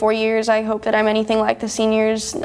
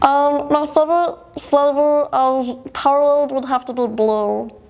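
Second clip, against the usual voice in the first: cartoonish high chipmunk character voice. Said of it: "I can answer my next question in the voice".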